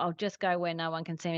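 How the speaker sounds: ordinary delivery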